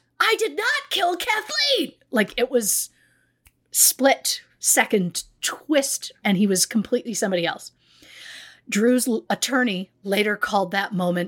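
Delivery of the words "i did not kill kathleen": abrupt switch into a very high, sudden snap. Recounting a court case, acting out a man snapping in court after the ruling. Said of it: "turned on a dime and snapped".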